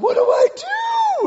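desperate, very high, very slow drawn-out wail. Retelling the speaker's wife paddling against the current, imitating her desperate scream. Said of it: "she just screams. She goes, and just desperation".

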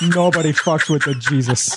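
put-on Brazilian accent. Quoting the Jesus answering Steve Buscemi: Brazilian accent as the Jesus. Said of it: "Your accents are sound Brazilian".

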